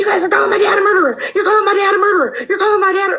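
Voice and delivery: high yelling outburst, repeated on a loop. Retelling how she would yell stuff out on repeat at you all, imitating someone yelling. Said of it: "She would like yell stuff out like".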